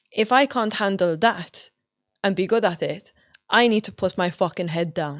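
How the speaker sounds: usual speaking voice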